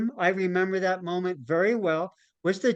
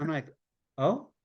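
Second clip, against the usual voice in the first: normal talking voice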